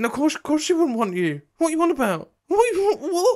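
high, loud, stammering, spluttering outraged disbelief.

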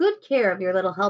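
ordinary delivery

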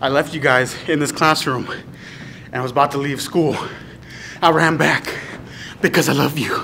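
breathless, panting, winded speech. Telling viewers about running back to get the camera, breathing hard. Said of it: "I know I'm breathing hard".

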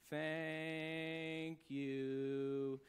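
dreary, flat, sad monotone, dragged out. Describing how a crowd usually thanks them: imitating a sad monotone thanks. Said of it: "the most monotone and sad-sounding thank you".

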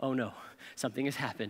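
very hushed, rushed, frantic panic. Retelling when a woman wouldn't answer her phone, acting out own past panic. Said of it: "I'm panicking".

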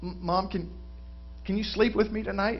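put-on shaky voice. Telling a joke, acting out a small boy asking his mom: retelling a shaky voice. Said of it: "You hear him say through a shaky voice".

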